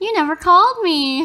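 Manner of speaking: high, loud, flirty pouty whine.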